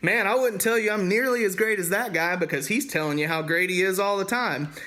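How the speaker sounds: dry, needling, mildly sarcastic tone. Retelling what Paul wrote about his critics, imitating Paul being sarcastic. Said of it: "a little sarcastic because he was like".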